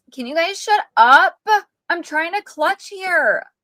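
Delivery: put-on high, whiny, complaining girl voice. Quoting exactly what she said after getting killed, whiny girl voice. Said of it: "this is exactly how she says it. ... Like with that whiny girl voice".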